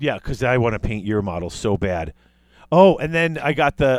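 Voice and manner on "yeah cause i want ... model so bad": ironic, sarcastic-sounding tone. Answering another speaker about painting their army next: sarcastic-sounding tone. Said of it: "the most sarcastic sounding thing".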